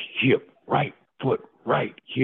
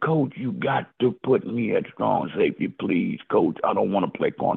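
mock tearful, crying voice, pitched low; 4 semitones lower than usual. Retelling begging his coach not to play corner: retelling tearful pleading. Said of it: "I'm wiping tears down".

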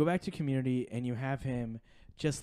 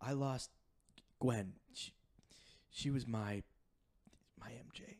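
put-on held-back tears, much quieter; 2 semitones lower, 10 dB quieter than usual. Describing a film scene, acting out Andrew Garfield holding back tears. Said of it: "He's holding back tears".

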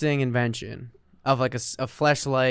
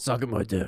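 put-on deeper voice, much quieter; 6 dB quieter than usual. Answering what SMD means during a joking bit; deeper voice. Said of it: "I did a deeper voice".

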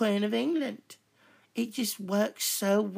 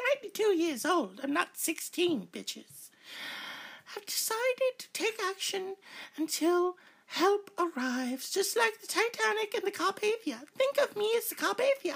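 put-on elderly British royal voice, pitched higher; 10 semitones higher than usual. Playing the Queen announcing she takes over America: Queen Elizabeth II impression. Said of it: "I, Elizabeth the Second ... I mean the Queen".

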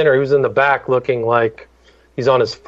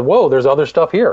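usual speaking voice

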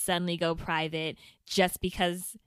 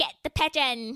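fake, inaccurate London accent with higher pitch; 8 semitones higher than usual. While the others mock the attempt, the speaker tries a bad london accent. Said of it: "like London?".

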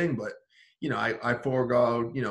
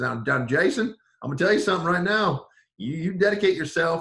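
put-on Southern accent, higher pitch; 6 semitones higher, 5 dB louder than usual. Recounting what the head coach told him in his office, imitating Garrett Arnell's Southern accent. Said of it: "I'm not gonna continue on with his accent".

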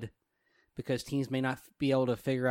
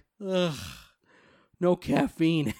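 spoken through a yawn; 4 semitones higher than usual. Retelling a TV scene, acting out a character's yawn. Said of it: "And he yawns like".

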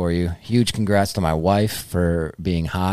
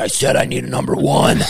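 growly, demanding, put-on gruff superhero voice. Like a customer repeating an order in a deep, gravelly hero voice and refusing to be misunderstood at the speaker box. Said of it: "Be Batman".

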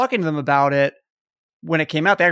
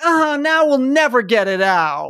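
whiny, self-pitying; 8 semitones higher than usual. Retelling a movie scene where he whines as his X-wing sinks into the swamp: imitating someone whining. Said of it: "he starts whining like".

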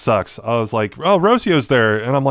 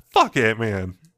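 breezy, casual, offhand throwaway tone; 4 semitones lower, 4 dB quieter than usual. Imagining a grown man telling an eight-year-old off: imitating a casual, non-aggressive dismissal. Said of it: "not saying it, like, like, in a, like, aggressive way".

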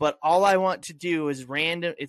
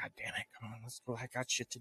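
muttered under one's breath, much quieter; 5 semitones lower, 17 dB quieter than usual. Recalling the usual rush to leave, retelling a mutter under breath. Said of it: "All saying it under his breath".

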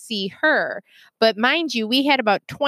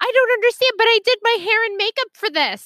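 put-on angry voice, higher; 11 semitones higher than usual. Retelling a mom's complaint during a video call: imitating an angry mom. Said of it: "She was so mad".

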